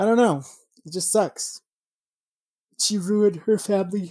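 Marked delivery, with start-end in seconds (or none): 2.8-4.1 speech stretched out through a yawn. Mid-conversation, the speaker says this while yawning. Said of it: "Sorry, I'm yawning".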